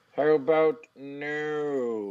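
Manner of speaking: comic movie villain voice, final "no" stretched out. Recapping a wrestler turning down a challenge, doing a Dr. Evil impression. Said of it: "Cesaro does a Dr. Evil impression and says".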